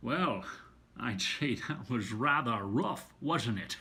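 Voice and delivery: character voice with slurred, shushing s sound. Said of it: "translate into other characters".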